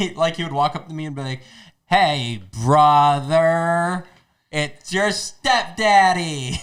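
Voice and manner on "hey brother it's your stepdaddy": very slow, stretched-out, drawn-out words. Retelling how his stepdad would greet him, imitating his slow-talking stepdad. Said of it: "He literally talked like that".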